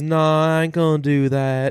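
put-on sweet Southern accent, laid on thick. Retelling a line from a movie trailer: imitating Dakota Johnson's sweet Southern accent. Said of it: "very, like, Southern and sweet".

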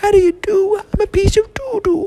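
very high-pitched cartoon character voice. Playing a talking piece of poo, Mister Hankey voice. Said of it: "I'm Mister Hanky".

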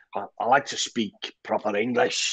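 put-on, terrible Scottish accent. Quoting a famous Bill Shankly line, in a terrible Scottish accent. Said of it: "I'm doing a terrible Scottish accent".

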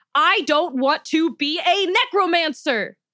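very slow, high scream with the voice cracking. Nejma bellows at Dr. Saltzman, screaming with her voice cracking. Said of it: "Her voice cracked several times, as though she hadn't screamed this loud".

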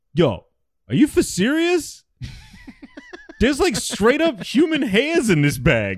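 very high, swooping, affected fake tough-guy voice. Retelling a guy who called them, doing his Malibu's Most Wanted minstrel-show voice. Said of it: "He would do that classic Malibu's Most Wanted minstrel show bullshit".

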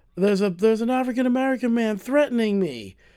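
put-on panicked screaming. Retelling a woman's phone call, imitating a panicked scream. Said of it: "like panic sounding".

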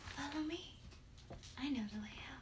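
very soft, hushed, airy, wispy little voice. A game master voices an unseen guide leading the players out of darkness: soft, wispy little voice. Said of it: "a soft, wispy little voice go".

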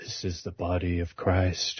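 quiet, low whispering. Recounting what he would whisper to him at the front of the line: retelling a whisper. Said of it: "he'd whisper to me".

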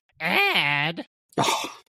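mock high calling, drawn-out Ad. Showing how his mother woke him for school, imitating mom's wake-up yell. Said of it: "she would always yell".

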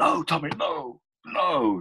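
put-on, very high, urgent shout. Retelling how Eric shouts to Tommy during a fight, imitating Eric's shout. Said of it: "And then Eric shouts".

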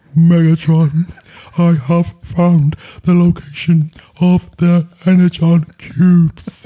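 words dragged out like tape playback. Describing Soundwave reporting to Megatron: Soundwave voice. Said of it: "that's how he talks, 'cause it's like an audio tape".

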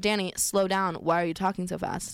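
ordinary talk

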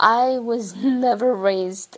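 voice cracking and breaking mid-line. Speaker opening up about how they were raised, voice cracking. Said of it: "my voice just cracked".

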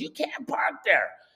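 light put-on scream. Retelling a lady at the car window: imitating a woman screaming at the top of her lungs. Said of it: "screaming at the top of her lungs".

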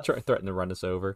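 ordinary talk

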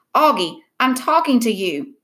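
plain

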